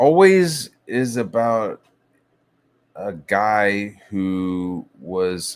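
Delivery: very slow, stretched-out, drawn-out talk. Talking to a buddy, the speaker slows right down, talking really slowly. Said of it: "I'm talking really slow".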